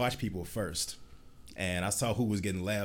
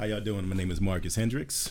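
deep, formal professional voice; 4 dB louder than usual. Guest introducing himself to the audience on the host's show, deep professional voice. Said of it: "You got all deep and professional".

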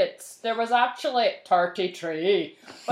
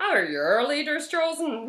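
put-on Northern Irish accent, higher; 6 semitones higher than usual. Reading a line again after changing accent: Belfast accent. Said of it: "I'm changing my accent".

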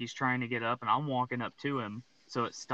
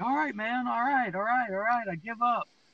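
put-on, very high, repeated screaming; 11 semitones higher, 4 dB louder than usual. Retelling how a man on the ground gave up: imitating someone screaming. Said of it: "he starts screaming at me".

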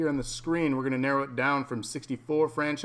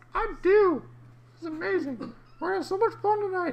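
very high, helium-sounding, squeaky-high voice. A co-host called [name] answering a fellow host, very high-pitched voice. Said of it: "Your voice is mighty high".

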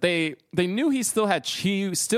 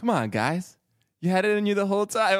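flat put-on voice with no emotion. Imitating Michael Jordan's motivational speech: emotionless Michael Jordan impression. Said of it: "even his motivational speeches are like".

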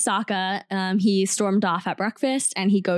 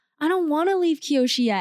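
put-on high, whiny, childish voice; 7 semitones higher than usual. Quoting exactly how he says a line, like a 3-year-old: mock whining. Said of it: "he says it exactly like that, like whining".

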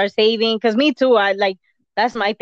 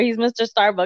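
ordinary talk

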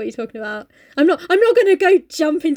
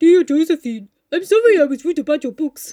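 put-on bear accent and voice. Imagining a big bear writing a letter, in a bear voice. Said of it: "That was a bear accent".

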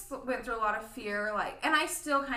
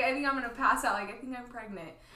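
ordinary talk

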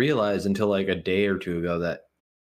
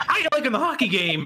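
put-on high-pitched old-lady voice. Imagining a costumed figure greeting kids at a hockey game, grandma impression. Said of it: "That was a good Grammy impression".

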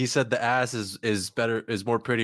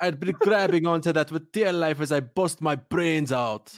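poor put-on Jamaican accent, pitched up; 6 semitones higher than usual. Taking a turn at doing accents while others watch; attempted Jamaican accent. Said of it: "I already had the Jamaican accent".

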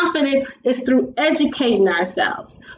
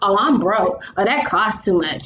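sour, negative tone with a little stank attitude; 5 semitones lower than usual. Giving an example of what not to say about money, speaker uses negative, stank attitude. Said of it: "you see how I got that negative, that little stank attitude in my voice?".

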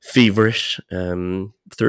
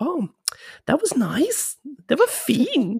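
put-on girlish Stockholm Swedish accent. Recalling working in a Nike store, speaker talks to kids: young Stockholm girl voice. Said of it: "I started speaking like a 20-year-old girl from Stockholm".

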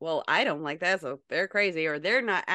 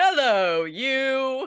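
high, loud call with "you" drawn out long; 8 semitones higher, 6 dB louder than usual.

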